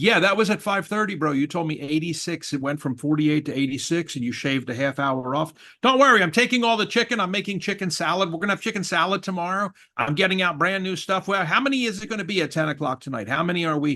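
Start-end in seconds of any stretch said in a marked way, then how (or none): 11.3-13.8 voice rising and escalating higher phrase by phrase. Speaker pressing about a changing head count, voice escalating. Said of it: "starting to escalate the intonation of your throat and voice".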